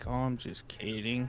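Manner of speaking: acted deadpan, flat, hushed, very quiet dry monotone. Describing a movie character who always sounds dry, the speaker imitates his dry, flat delivery. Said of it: "he talks like this".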